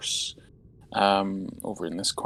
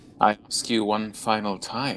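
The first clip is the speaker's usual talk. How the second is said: stately, regal, royal-sounding voice. Game master voicing the Sphinx guarding a staircase, in a regal voice. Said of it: "in this sort of regal voice".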